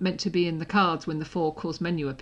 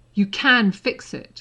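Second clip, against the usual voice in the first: pressing urgency, raised, very slow and drawn out; 3 semitones higher, 7 dB louder than usual. Narrating a story, voicing Harry speaking to Hermione, urgent. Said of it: "Harry said urgently".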